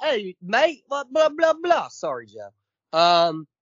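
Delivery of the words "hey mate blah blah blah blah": very high-pitched, put-on British accent. Imagining Rick on The Walking Dead suddenly switching accents: Rick in a British accent. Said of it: "starts talking in a British accent".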